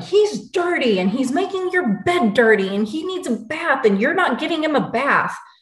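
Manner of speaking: high, mildly yelled rant. Retelling how Dad yelled that the son needs a bath, retelling a yell. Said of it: "he starts yelling".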